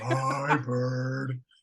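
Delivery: put-on slow muppet voice. Doing a quick impression of Snuffleupagus.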